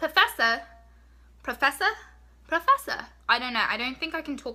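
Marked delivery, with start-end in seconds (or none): 0.0-3.0 bad, clumsy, high-pitched fake English accent. Trying the accent again after apologizing for it: bad english accent. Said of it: "Let me try again".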